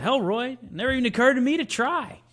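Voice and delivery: very high-pitched character voice. Quoting a movie line as Don Johnson: Don Johnson impression. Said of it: "the way that you said Don Johnson's line is exactly how Don Johnson says it".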